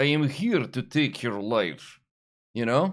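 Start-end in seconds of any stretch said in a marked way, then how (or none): 0.0-2.0 heavy, full-on, put-on Russian accent. Showing what a full-on Ukrainian or Russian accent sounds like: put-on strong Russian accent. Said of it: "full on, you know, U-, Ukraine, Russia".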